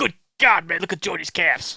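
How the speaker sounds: put-on American accent. Showing the others an American accent: Ritz voice. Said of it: "the problem with Ritz is it's so easy to do".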